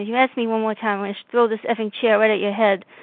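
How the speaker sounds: normal talking voice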